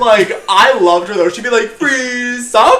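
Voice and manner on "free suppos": put-on thickest over-the-top Russian accent, pitched up. Imitating the girl handing out free samples, in an exaggerated Russian accent. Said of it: "would always do like the most like exaggerated".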